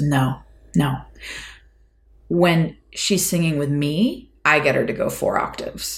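ordinary talk, nothing marked

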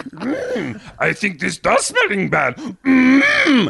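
high-pitched, swooping, drawn-out character voice. Joking with another speaker about smelling bad: Fozzie Bear voice. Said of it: "That was my Fozzie Bear impersonation".

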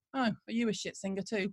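put-on calm, unraised voice. Retelling how a person answered without raising her voice: imitating a calm, unraised voice. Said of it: "Amanda doesn't even raise her voice".

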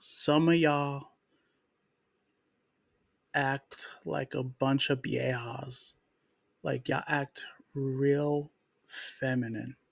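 deliberately slow, drawn-out delivery.

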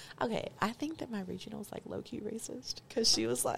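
hushed, very quiet, barely audible whisper. Confiding about a regional who might be racist: whispering. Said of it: "why am I whispering?".

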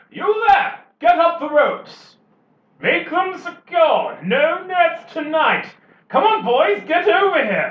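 high, commanding, authoritative voice. In a scene, calling orders to the boys while others talk underneath, bellowing orders. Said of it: "do it while I bellow".

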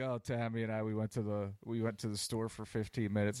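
ordinary talk, nothing marked

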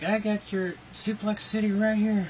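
little, high, level, squeaky wrestler voice.

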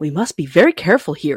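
plain reading voice

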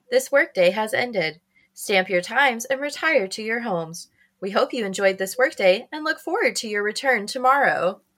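smooth, pleasant female PA announcer voice. Mocking the end of the workday, imitating the announcement after the anthem: pleasant female announcer voice. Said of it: "by a pleasant female voice".

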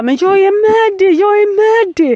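furious, angry, insistent, high-pitched voice. Retelling what Pelle said while playing a snake, imitating Pelle furious. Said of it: "Och han då i sitt spir och helt arg".

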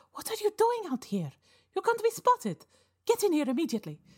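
high-pitched creature voice. Game master voicing the tabaxi who grabs a player's arm: higher tabaxi voice. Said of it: "the tabaxi with the higher voice".

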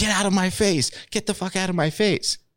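mock very high, shrill, hysterical screaming. Recounting a hysterical person who got in the speaker's face: retelling someone screaming. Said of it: "started screaming things at me like".

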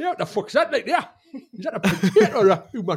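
high-pitched northeast English accent. Prompted to do the accent again over a Gateshead news story, doing own northeast accent. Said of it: "You can do your accent again".

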